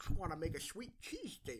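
put-on soft, swooping toothless old man voice. Speaker voices a kid in his bit: old man voice. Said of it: "Why did you make him sound like an old man?".

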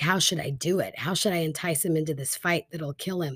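ordinary talk

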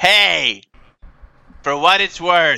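grand, big, declaiming character voice. Narrating the final seconds as Emosif speaks, in a booming voice. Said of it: "seconds of the booming voice you hear".

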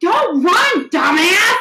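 acted-out loud, high-pitched yelling. Retelling calling after a running teenager: retelling a loud yell. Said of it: "I look up the street and I yell".

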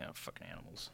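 hushed, grumbling whisper muttered under the breath. Game master voices a guard whisking the players away: muttering under his breath. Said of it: "mutter under his breath".

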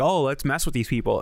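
ordinary talk

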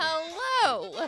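drawn-out high hello. Greeting listeners at the start of recording: Catherine O'Hara doing Meryl Streep. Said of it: "my impression of Catherine O'Hara doing a Meryl Streep impression".

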